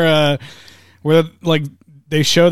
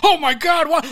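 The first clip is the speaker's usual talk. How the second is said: put-on very high, startled, panicked yelp; 13 semitones higher than usual. Retelling how all the dinosaurs woke up: imitating panicked dinosaurs. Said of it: "all the dinosaurs wake up in a fucking panic".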